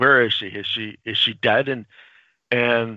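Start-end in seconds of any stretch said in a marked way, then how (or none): none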